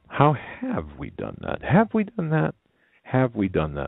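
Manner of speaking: voice cracking. A speaker addressing listeners before a sponsor message, voice cracking. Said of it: "my voice is cracking".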